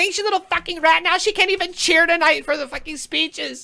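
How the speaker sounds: very high, shrill, enraged, furious yelling scream. Telling listeners what they will hear next, imitating Jessamine's angry scream. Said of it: "Jessamine is gonna be like".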